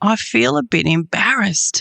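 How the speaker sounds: put-on whispered words. Retelling what a woman whispered beside the speaker in church, imitating a whisper. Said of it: "she whispered to me".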